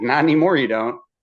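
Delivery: words spoken through laughter. Retelling what the guy said, imitating someone laughing while talking. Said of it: "he was like kind of laughing when he said it".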